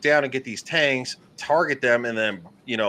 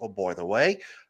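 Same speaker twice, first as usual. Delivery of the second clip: bad put-on British accent, lower in pitch; 4 semitones lower, 3 dB quieter than usual. Telling how Holly's internet dropped during a game, Holly impression, terrible British accent. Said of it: "that's a terrible British accent".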